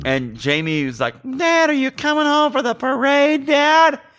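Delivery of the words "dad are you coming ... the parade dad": put-on high child voice. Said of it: "I love my Jamie impression".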